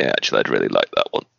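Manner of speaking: low fast creaky aside.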